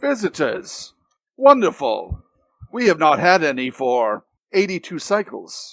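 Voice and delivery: completely robotic, machine-like voice. Narrating a game scene, the priest turns to greet the visitors; completely robotic voice. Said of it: "in a completely roboticized voice".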